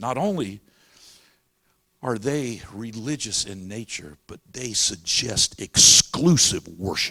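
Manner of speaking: scornful, deliberate tone. Retelling a courtroom exchange, imitating Ruth Bader Ginsburg's disdain. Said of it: "she said it with such disdain".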